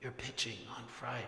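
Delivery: very quiet, hushed half-whisper after a sigh. Telling a joke, Abe sighs and half-whispers the bad news to Saul. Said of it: "Abe sighed and whispered".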